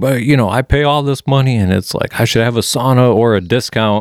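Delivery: angry shouted rant. Retelling a man's complaint to the guy next to him, imitating a screamed rant. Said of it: "this guy just starts screaming at the top of his lungs".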